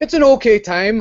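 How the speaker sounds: terrible Geordie impression. Imitating how a friend described an event: bad Geordie accent. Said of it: "that's my Geordie impression".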